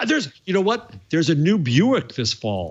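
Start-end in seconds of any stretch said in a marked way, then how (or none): 1.1-2.7 overplayed sarcastic, swooping sing-song tone. Joking about how exciting announcements used to be: sarcastic. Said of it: "Are you being sarcastic?".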